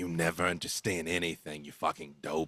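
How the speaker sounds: rough, gruff, very deep, quiet voice. Narrating a scene, voicing one of several overheard speakers, in a gruff voice. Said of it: "you hear a gruff voice say".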